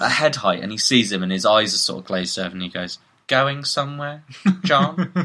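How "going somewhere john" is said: eerie, creepy put-on receptionist voice, laid on. Telling an improvised horror story, voicing the receptionist: put-on creepy receptionist voice. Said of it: "His voice is now that, by the way".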